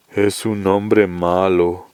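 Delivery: deep, flat, mechanical, machine-like drone. Reading a novel aloud, the big man John answers in a deep, mechanical voice. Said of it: "dijo John con voz grave, maquinal".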